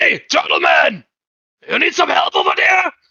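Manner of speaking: loud, high yell rising, as if calling far off. Calling to the turtle man almost a hundred feet away, yelling really loudly. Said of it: "and I'm yelling really loudly".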